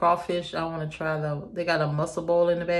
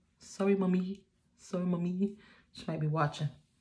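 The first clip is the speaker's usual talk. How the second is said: soft, hushed, apologetic half-whisper; 5 dB quieter than usual. Apologizing for cursing in case the mother is watching, half-whispering. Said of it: "I don't know why I started whispering".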